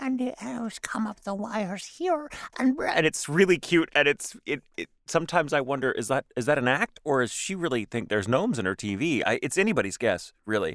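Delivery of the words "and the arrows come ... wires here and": deliberately bad, very high-pitched put-on voice. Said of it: "This is my horrible [name] voice".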